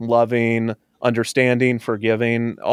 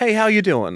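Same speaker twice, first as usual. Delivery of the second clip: laid-back, relaxed tone, pitched very high; 9 semitones higher than usual. Doing an impression of Rob, a friend: Rob impression. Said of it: "That's my Rob impression".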